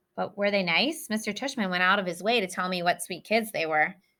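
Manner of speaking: ordinary talk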